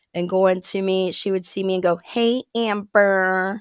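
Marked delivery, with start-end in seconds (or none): 2.0-3.6 put-on American accent. Retelling how a supervisor would greet the speaker, in a fake american accent. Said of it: "in a fake American accent".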